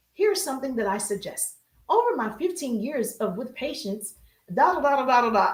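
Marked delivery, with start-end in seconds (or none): 0.2-3.6 put-on soothing radio voice, mock, quieter. Playing a therapist greeting viewers for a joke: put-on soothing therapist voice. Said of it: "bringing out the radio voice".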